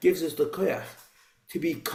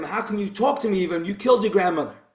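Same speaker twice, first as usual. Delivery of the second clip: play-acted heated, indignant shouting; 4 semitones higher than usual. Retelling the shliach turning on the campaigner, retelling a shout. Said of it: "And he shouts at him".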